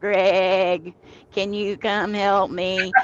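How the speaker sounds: quavering, bleating goat voice, a name drawn out. Imitating how she used to call the speaker's brother, goat-like voice impression. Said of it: "that's exactly what she sounded like".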